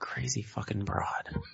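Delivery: muttered under the breath. Game master voicing a man after she walks back upstairs, under his breath. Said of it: "Then under his breath".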